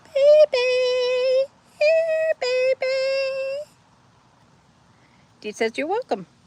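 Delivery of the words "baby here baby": very high-pitched, drawn-out calling voice. Told to call her in a high-pitched voice, the speaker calls out in a high-pitched voice. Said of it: "call her in a high pitched voice".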